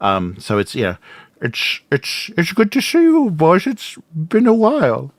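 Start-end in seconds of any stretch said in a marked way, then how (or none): 1.4-5.0 high, swooping voice bent by oversized teeth. Speaker greets the boys as their uncle, in a big-tooth uncle voice. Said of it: "the big tooth voice".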